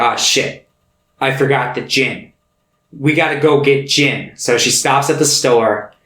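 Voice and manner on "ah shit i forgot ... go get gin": ordinary talk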